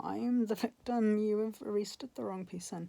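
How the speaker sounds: tearful, crying, begging pleading tone. Retelling pleading after being arrested: retelling a tearful plea. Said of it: "I was just crying and saying".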